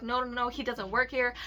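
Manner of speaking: ordinary delivery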